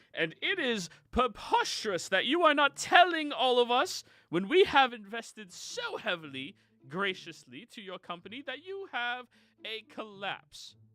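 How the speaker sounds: very high-pitched, indignant, angry yelling. Game master voicing Spaulding out front of a building, Spaulding yelling. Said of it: "yelling at the building".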